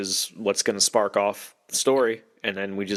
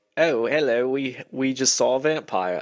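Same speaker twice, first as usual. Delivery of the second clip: put-on stagey, posh, upper-crust English accent; 4 semitones higher than usual. Mocking how characters talk in the film Nosferatu; Nosferatu-style English accent. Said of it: "everybody immediately gets an English accent".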